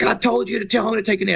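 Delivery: harsh, scolding screaming, voice pushed up high. Retelling how his coach screamed at him, retelling the coach screaming. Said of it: "he is screaming at me".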